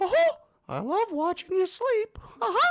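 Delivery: very high, booming sing-song voice, slow and swooping. Joking about the toy talking at night, My Pal Mickey voice. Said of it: "he would go".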